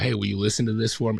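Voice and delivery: ordinary talk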